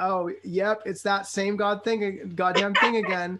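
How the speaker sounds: ordinary talk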